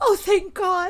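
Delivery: high, loud, relieved outburst.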